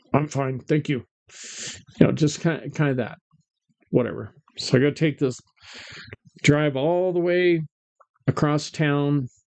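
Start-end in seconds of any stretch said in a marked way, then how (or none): 0.1-1.0 put-on quiet, curt voice. Retelling how a picked-up young gal answered: imitating a quiet, curt reply. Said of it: "very quiet and kind of curt".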